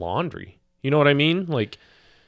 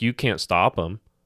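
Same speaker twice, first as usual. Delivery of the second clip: usual speaking voice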